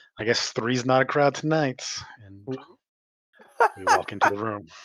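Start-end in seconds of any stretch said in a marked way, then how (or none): 0.2-1.9 hearty, good-humoured, jovial, easygoing tone. Voicing a character who invites others into the room: jovial. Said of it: "look around and jovially say".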